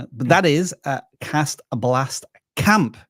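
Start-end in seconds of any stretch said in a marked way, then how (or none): 1.2-2.9 very slow, drawn out, each word carefully enunciated. Naming a channel for the audience, very slow and careful. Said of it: "I have to say that very slowly and carefully".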